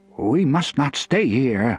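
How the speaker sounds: trembling, shaky, wavering voice. Reading the story, the narrator voices Worm's line in a shaky voice. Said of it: "Worm said in a shaky voice".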